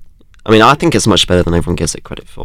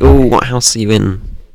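normal talking voice

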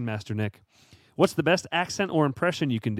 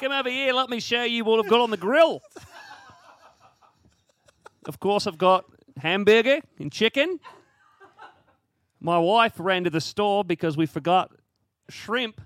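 terrible put-on Australian accent, pitched up; 7 semitones higher than usual. Speaker showing how Australians talk, after admitting a poor attempt: terrible Australian accent. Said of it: "I do a terrible Australian".

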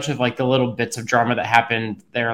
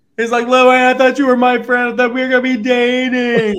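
put-on drunken slurring, pitched much higher; 12 semitones higher, 4 dB louder than usual. Recapping a Bravo scene, imitating Ray talking to Louie: drunk slurring impression. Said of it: "he's drunk, slurring".

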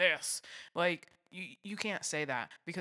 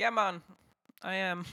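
loud, fake, poorly done Jamaican accent; 4 semitones higher, 5 dB louder than usual. Retelling what one of the people said to Will: bad Jamaican accent. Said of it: "That's not a good Jamaican accent".

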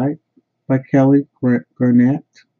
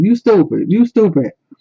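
mock high-pitched shouting; 7 semitones higher than usual. Describing a frustrating movie, acting out viewers mock screaming at the TV. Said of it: "You start screaming at the TV".

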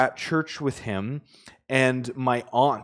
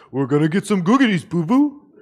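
high, quick, put-on cartoon bear character voice; 5 semitones higher, 5 dB louder than usual. Lean over to your aunt before communion and do your best Yogi Bear impersonation. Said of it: "in my best, Yogi Bear impersonation".

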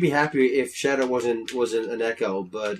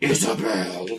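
put-on menacing voice, lower pitch; 3 semitones lower than usual. Imagining Isabel on the character select screen, call her name in a put-on evil Isabel voice. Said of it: "because of how evil Villager sounds".

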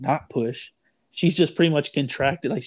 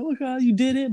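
very high, tearful crying yell, voice cracking; 9 semitones higher than usual. Retelling the moment he came out, retelling a cracked crying yell. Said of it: "I'm like yelling".

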